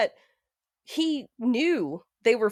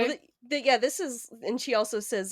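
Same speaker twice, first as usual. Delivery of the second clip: ordinary talk, nothing marked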